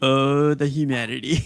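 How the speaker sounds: ordinary delivery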